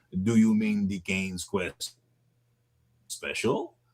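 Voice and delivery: put-on French accent. Retelling a man's question about the machine, quoting him in a French accent. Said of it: "He looked at me in his French accent".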